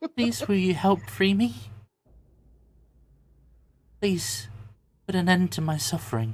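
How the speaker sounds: soft distant feminine voice. Voicing a trapped figure heard in a mind, pleading: soft, faint, distant feminine voice. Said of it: "a soft and feminine voice that sounds somewhat faint and perhaps distant".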